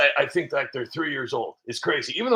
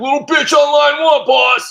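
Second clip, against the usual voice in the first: shrill, loud, high-pitched yell; 11 semitones higher, 10 dB louder than usual. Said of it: "J D Vance will be like".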